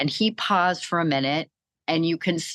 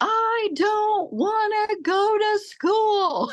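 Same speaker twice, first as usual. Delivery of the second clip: put-on lung-busting scream, very high, very slow. Retelling what he screamed today about school: imitating someone screaming. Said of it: "today it was screaming at the top of his lungs".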